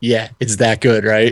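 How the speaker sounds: ordinary delivery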